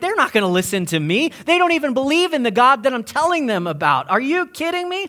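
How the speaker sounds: put-on, high, rising, panicky, disbelieving outburst. Acting out a prophet's reaction to being sent to preach; imitating someone freaking out. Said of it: "he was totally freaking out".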